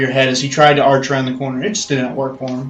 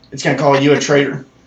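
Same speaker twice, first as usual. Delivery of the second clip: plain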